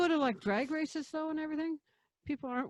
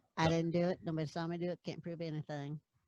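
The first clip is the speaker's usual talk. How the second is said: cartoon boy voice, dropped into low pitch; 6 semitones lower than usual. Joking about having Bart Simpson stuck in the throat, do a Bart Simpson voice. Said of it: "Got Bart Simpson stuck in there".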